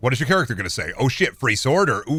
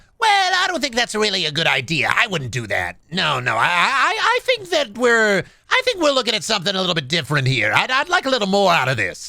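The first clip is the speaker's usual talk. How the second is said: animated, silly, sing-song character voice swooping high; 8 semitones higher than usual. Demonstrating the voice he uses for his game character: Imaginathan character voice. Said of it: "I do a voice for Imaginathan".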